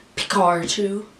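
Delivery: heavy, very strong American pronunciation. Showing how pikachu sounds in a very strong american accent. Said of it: "this is a very, very strong American accent".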